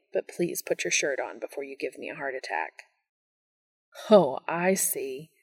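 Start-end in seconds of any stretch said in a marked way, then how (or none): 4.1-5.2 light, playful teasing jab. Asked to put his shirt on, a man teases her. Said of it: "Dean teased".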